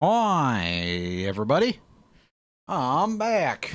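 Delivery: goofy put-on silly voice, drawn-out "hi". Coming back to the game and greeting everybody in a silly voice. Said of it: "I'm talking in the silly voice".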